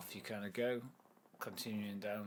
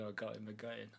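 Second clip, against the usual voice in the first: mock gleeful, delighted chortling and chuckling. Retelling someone pranking the speaker, imitating someone chortling gleefully. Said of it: "he's just chortling away to himself".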